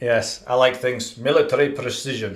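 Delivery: poor Russian accent. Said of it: "came out in a Russian accent".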